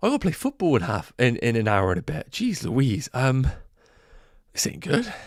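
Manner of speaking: winded, catching breath. Wrapping up the stream to go do a TikTok live, out of breath. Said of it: "But I am actually out of breath".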